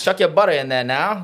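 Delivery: Creole-accented speech. Joking about cooking them a seafood boil, the speaker puts on a Creole accent. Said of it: "me making it for them with a Creole accent".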